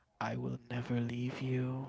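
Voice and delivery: hushed whisper. Retelling how something came right up to their ear and spoke: whispering. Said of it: "it whispers".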